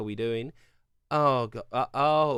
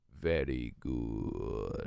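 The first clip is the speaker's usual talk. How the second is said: very low, deep, soft, nasty put-on voice; 13 semitones lower, 9 dB quieter than usual. Trying a Dark Souls-style line in a deep, nasty voice. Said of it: "just like a deep, nasty".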